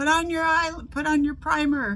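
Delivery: mock shout, high-pitched and loud.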